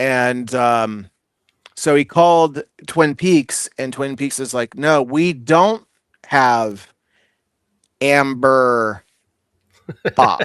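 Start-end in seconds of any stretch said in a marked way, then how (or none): 4.8-10.4 slow, sly, knowing, with drawn-out Amber. Retelling a bar's phone reply about a beer: imitating a knowing, winking tone.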